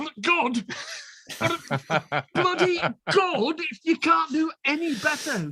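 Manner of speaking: high, excited, exultant shout.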